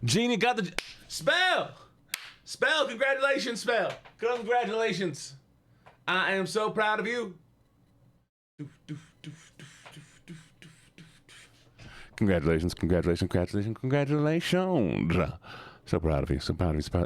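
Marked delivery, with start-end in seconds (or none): 0.0-7.3 very high, put-on Southern accent. Doing voices someone requested, offering congratulations, in a southern voice. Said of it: "I'm almost done with the southern voice".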